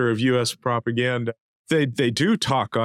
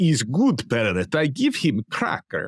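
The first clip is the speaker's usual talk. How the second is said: put-on Russian accent with swooping, swinging pitch. Joking about Carlson as a parrot on Putin's shoulder, Putin impression, Russian accent. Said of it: "you do a great Russian accent".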